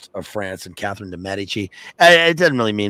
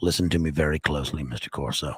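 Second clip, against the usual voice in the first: put-on looming voice, much lower; 5 semitones lower, 6 dB quieter than usual. Retelling a film scene, the speaker quotes Balkan on the telephone in Balkan's looming voice. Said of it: "Balkan in his looming voice on the telephone".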